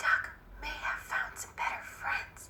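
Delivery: small, sorrowful, sad whisper. Narrating a story, the cat speaks to the squirrel in a sad little whisper. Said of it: "whispered in a sad little voice".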